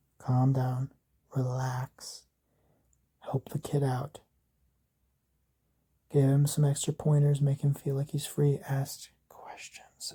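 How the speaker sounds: hushed half-whisper, under the breath. Acting out what a man says to someone as he walks away, half-whispering. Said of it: "As he whispers that".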